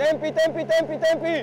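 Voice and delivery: high, loud, rapid shouted calls.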